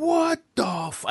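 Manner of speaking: mock raspy outburst, very high, rough scream. Recounting a card announcement at Madison Square Garden, the speaker repeats their reaction; retelling a scream. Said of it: "I just screamed like".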